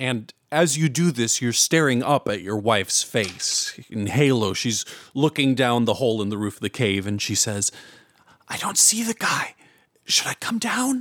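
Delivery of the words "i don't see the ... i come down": very high, hushed whisper. Storyteller voices the wife looking down the hole in the cave roof, whispering. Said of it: "what kind of a voice is this that's whispering to me".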